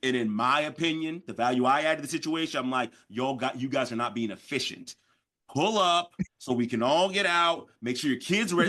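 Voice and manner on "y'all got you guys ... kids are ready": normal talking voice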